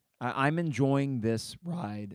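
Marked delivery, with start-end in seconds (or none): 1.2-2.2 voice breaking and cracking mid-line. Talking about the team's season, the speaker's voice breaks: voice cracking. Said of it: "Excuse me, voice crack".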